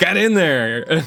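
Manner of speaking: shrub voice laughing while talking. Voicing a shrub that giggles after a player's jig: giggling shrub voice. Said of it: "The shrub kinda giggles a little bit".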